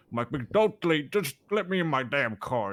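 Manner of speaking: put-on Southern American accent. Retelling what he said on the Fourth of July, in a southern accent. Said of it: "I was in a southern accent".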